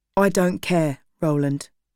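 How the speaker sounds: ordinary delivery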